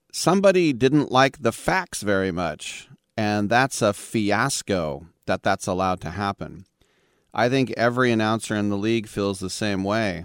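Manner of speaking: ordinary delivery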